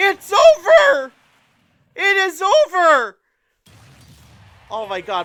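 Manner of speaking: voice cracking. Calling the end of a match after recording all night, voice cracking. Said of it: "my voice is cracking".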